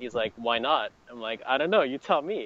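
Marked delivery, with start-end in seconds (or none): 1.5-2.5 put-on joking tone, higher. Recalling answering a man who asked why her drink isn't sold, retelling a joking reply. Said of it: "As like, jokingly".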